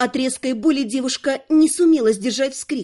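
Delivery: ordinary delivery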